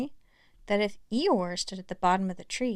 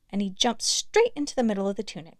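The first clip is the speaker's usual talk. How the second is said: ordinary delivery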